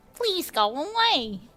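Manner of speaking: high crow puppet character voice. Voicing a character in a scene with another speaker, in the Don't Hug Me I'm Scared crow voice. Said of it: "The voice of this character is uh the voice of the crow".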